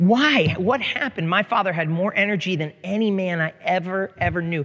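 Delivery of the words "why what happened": high-pitched, exasperated cry of frustration. Retelling a father hitting the table in frustration: imitating frustrated outburst. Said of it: "frustrated hitting the table".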